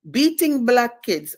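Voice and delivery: clumsy, bad put-on Russian accent, pitched high. Recalling a Russian woman's comment on the speaker's book, in a bad Russian accent. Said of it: "I can't do the accent good".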